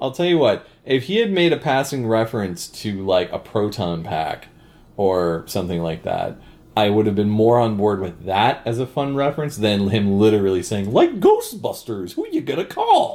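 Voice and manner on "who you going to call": goofy, very high-pitched, wacky put-on voice. Quoting a movie character's line to a co-host, in a wacky voice. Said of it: "I like when you use your wacky voice".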